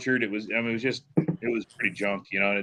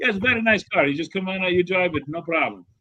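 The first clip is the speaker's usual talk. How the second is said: heavy put-on Italian accent, pitched up; 8 semitones higher than usual. Retelling a car seller's answer on the phone: imitating thick Italian accent. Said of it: "this guy with a thick Italian accent".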